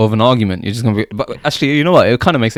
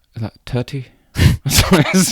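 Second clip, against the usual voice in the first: put-on Irish accent, mimicked Irish pronunciation; 2 semitones higher than usual. Chatting with a friend, mocking how Irish people pronounce T's: Irish accent impression. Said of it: "they can't pronounce their T's properly".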